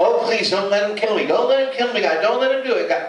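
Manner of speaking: play-acted high, tearful, crying pleading. Acting out a desperate prayer to God: imitating Jesus crying and begging. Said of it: "crying like a man on death row. Begging God".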